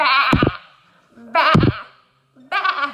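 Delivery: very loud, sheep-like bleating of ba, ba, ba. Showing learners a word with the last sound dropped: sounding like a sheep. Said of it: "or you'll sound like a sheep".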